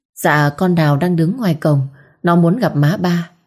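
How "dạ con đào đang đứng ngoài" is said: ordinary delivery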